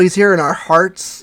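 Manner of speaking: stress on here lifted on a rise, heartfelt.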